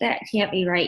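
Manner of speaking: usual speaking voice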